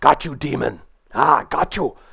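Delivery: put-on Afrikaans-accented English. Game master voices a big guy grabbing a player's character, in an Afrikaner accent. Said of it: "he says in this Afrikaner kind of accent".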